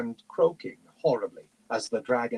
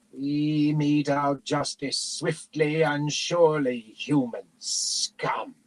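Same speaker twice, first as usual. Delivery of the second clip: monstrous, hissing dragon voice; 3 semitones higher than usual. A dragon looms over a wounded man by a bonfire: hissing dragon voice. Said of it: "the dragon hissed".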